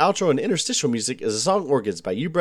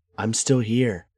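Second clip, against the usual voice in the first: whisper, lower; 5 semitones lower than usual. Speaking in character to party members who lost track of them: whispering. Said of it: "I whisper".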